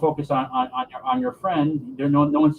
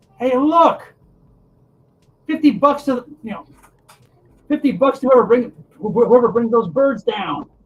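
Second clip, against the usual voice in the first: put-on high, loud little girl voice calling out; 8 semitones higher, 5 dB louder than usual. Narrating an audience member calling out from below, in a little girl voice. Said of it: "in a little girl voice".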